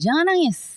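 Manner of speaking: high scolding voice. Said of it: "anak kecil kan sering banget kita dibilang".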